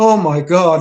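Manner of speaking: frightened, scared womanly exclamation. Retelling a big guy seeing the basement picture, imitating his cry in a woman's voice. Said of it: "like in a woman's voice".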